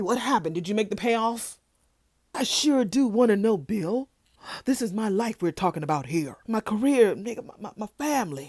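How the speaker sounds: put-on loud talking. Retelling a scene where Martin talks loud in the lobby: imitating Martin talking loud. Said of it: "Martin all damn loud in the lobby".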